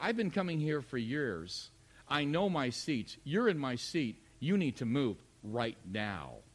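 mock, scornful, contemptuous tone with a laugh. Retelling a stranger's demand for the seat: imitating a contemptuous laugh. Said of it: "with a kind of contemptuous laugh in his voice".

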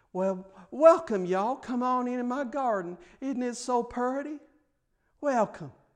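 put-on gentle old Southern lady voice. Voicing irises as ladies welcoming you into their garden: gentle old southern lady voice. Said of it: "gentle old southern ladies welcoming you".

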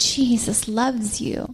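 hushed, close, soft whisper. Showing how to speak to a baby in the nursery: whispering. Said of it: "You can just whisper, whisper to that little baby".

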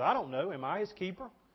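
dripping sarcasm, dismissive. Retelling Cain's answer when God asks where his brother is: imitating Cain's sarcasm. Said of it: "you see the sarcasm coming out in Cain".

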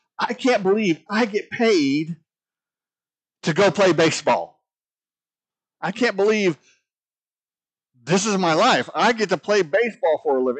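put-on joyful high voice. Pastor retelling a baseball player's words, imitating a joyful voice. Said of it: "the joy in his voice".

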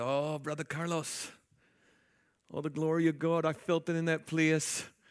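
put-on Jamaican-accented voice. Quoting what a dear sister said to him, imitating a Jamaican accent. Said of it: "She had a Jamaican accent".

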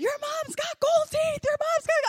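very high, worked-up, excited hollering. Retelling dad's news on the phone: imitating excited yelling. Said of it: "'cause he was so excited".

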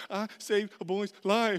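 acted-out crying. Retelling a phone call to mom about saving a boy, acting out own crying. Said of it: "and I'm crying".

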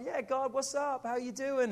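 put-on excited, bubbly voice. Retelling a bible story, the speaker acts out a man answering god, imitating excited greeting. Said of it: "he's like all excited".

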